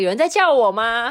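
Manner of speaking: put-on, loud, high calling-out voice. Retelling how a coworker named 坤意 answered: imitating a coworker speaking loudly. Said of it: "他就很大声地说".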